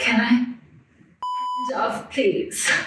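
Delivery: halting broken English, high, swooping sing-song phrasing. Retelling what a stranger asked in an elevator: imitating broken English. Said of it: "In, like, broken English".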